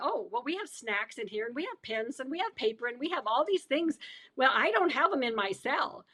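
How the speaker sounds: ordinary talk, nothing marked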